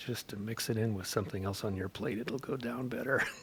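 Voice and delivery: very hushed, breath-only, confiding half-whisper. Retelling what a grandfather would lean over and say: imitating a half-whisper. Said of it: "kinda lean over and whisper".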